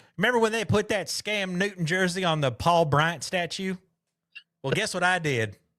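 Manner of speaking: put-on Southern accent, North Alabama style. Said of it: "that man was so North Alabama".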